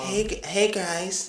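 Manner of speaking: male voice put on as female. Showing how a man pretending to be a girl sounds: man faking a girl's voice. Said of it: "a dude trying to pretend that there was a girl".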